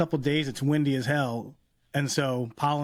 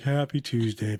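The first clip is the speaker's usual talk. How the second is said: put-on, mopey creature voice. Teasing the co-host by echoing her greeting in a Snuffleupagus voice. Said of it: "It was like Snuffleupagus".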